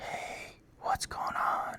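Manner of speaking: breathy, very soft whisper, close to the ear. Retelling a whispering game in the ear: imitating a whisper. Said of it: "he whispers".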